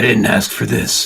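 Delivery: gruff, angsty character voice. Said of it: "the way he talks".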